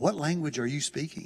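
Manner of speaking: discreet, hushed, quiet voice. Retelling how the translator leaned over and asked: imitating someone speaking quietly. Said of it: "he leans over real quietly and he goes".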